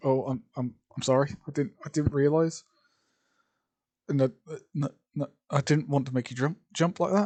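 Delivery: nervous, flustered stuttering and stammering. Reading a story aloud, a girl apologizing after startling someone: stuttering, flustered. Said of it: "she sort of just stutters over her words".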